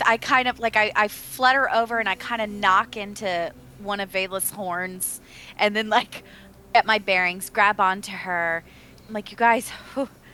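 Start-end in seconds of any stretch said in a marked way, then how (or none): 9.3-10.1 puffing, badly short of breath, panting. Playing a character arriving at breakfast, acting out of breath. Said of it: "super out of breath".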